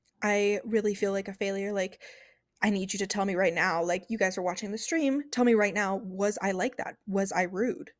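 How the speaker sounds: plain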